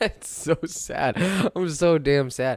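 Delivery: high, slow sad speech broken by laughing. Reacting to a Minnesota team's loss, laughing while talking. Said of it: "I'm only laughing 'cause if I don't laugh".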